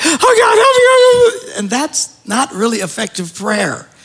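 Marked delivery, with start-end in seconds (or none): 0.0-1.6 very high, very slow, drawn-out panicked sobbing. Imitating people who panic and cry when they pray: imitating panicked crying prayer. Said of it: "they're just panicking ... they're crying".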